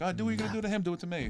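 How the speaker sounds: screaming. Retelling confronting some kids in their face: retelling own screaming. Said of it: "literally in their face screaming at them".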